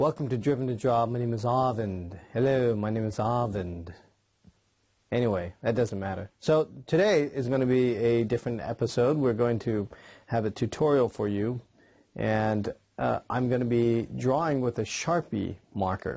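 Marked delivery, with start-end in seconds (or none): 0.0-3.9 put-on British accent. Host imagines opening the show differently, in a put-on British accent. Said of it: "like a a British accent?".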